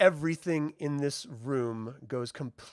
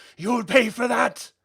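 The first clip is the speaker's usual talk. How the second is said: furious scream, higher and louder; 10 semitones higher, 8 dB louder than usual. Voicing a hit enemy who screams at the humans: screaming in character. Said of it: "He sort of screams out".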